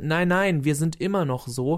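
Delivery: desperate tone. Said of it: "dieses verzweifelte".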